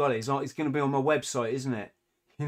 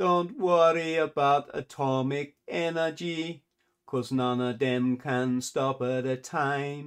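put-on Jamaican accent. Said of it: "shall I try and do the accent?".

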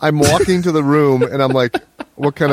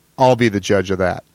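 put-on, low, snide, dismissive delivery; 5 semitones lower than usual. Retelling what they said back to a woman at the time: retelling a snide remark. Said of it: "And then I snidely say".

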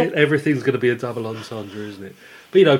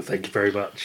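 usual speaking voice

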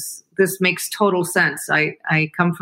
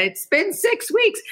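mock, shrill, tearful, very high-pitched screaming. Retelling a phone call to a pharmacy about a late package, retelling screaming. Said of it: "I'm literally screaming at them".

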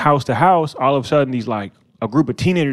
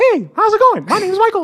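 very high cartoon voice swooping around in pitch. Recalling a boy in their group who talked that way: Mickey Mouse voice. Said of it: "really like sound like Mickey".

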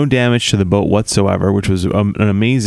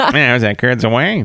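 put-on old-comedian spider creature voice; 3 semitones higher than usual. Voicing a spider coming down, a speaker switches to a Bob Hope spider voice. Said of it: "Or it's a Bob Hope spider".

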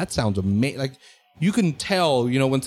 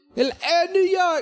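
fake British accent, very high-pitched, slow and drawn-out. Imitating how a british musician talks: put-on british accent. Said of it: "That's my British guy".

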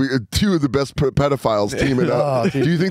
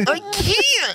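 put-on frustrated little kid voice, very high. Retelling being unable to pee on request: frustrated child voice. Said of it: "frustrated child voice where I go".

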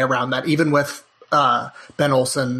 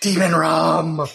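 aghast, horrified recoil, "rum" drawn out; 3 semitones higher than usual. Retelling how mother reacts whenever rum comes up: imitating mother recoiling in horror. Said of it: "recoils, and she's like".

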